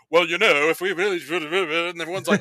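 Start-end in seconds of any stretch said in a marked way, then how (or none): 0.1-1.1 loud, sudden, random put-on British accent. Describing a silent movie character who finally talks: random British accent. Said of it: "he has this like random British accent".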